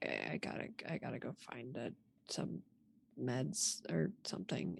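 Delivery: very quiet, hushed, stumbling, pained mutter. Voicing a hurt character who is holding parts of her body: muttering in pain.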